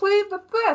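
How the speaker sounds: loud, high-pitched yell. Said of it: "Please stop yelling".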